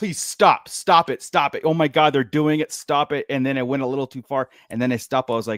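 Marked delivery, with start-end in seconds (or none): none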